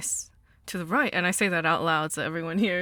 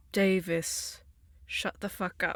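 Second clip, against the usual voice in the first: serene, zen-like, calm, meditative delivery; 4 dB quieter than usual. Talking back to a voice in the head: calm, meditative. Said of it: "in, like, a calm, meditative state and go".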